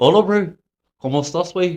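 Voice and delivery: put-on New Zealand accent. Trying out accents, speaking Spanish in a New Zealand accent. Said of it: "Let me do a New Zealand accent in".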